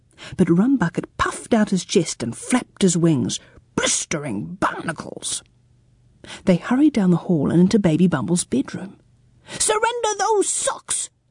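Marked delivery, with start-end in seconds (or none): 9.6-11.1 very high, loud shouted voice. A baby confronts sock-stealing pirates in her bedroom and yells. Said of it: "yelled Baby Bumble".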